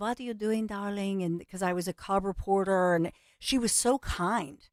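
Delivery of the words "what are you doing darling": put-on, affectionate Eastern European accent. Recall how she spoke to you as a cub reporter, in an Ivana Trump accent. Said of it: "had that accent".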